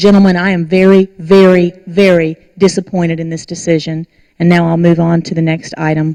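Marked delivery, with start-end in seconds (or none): none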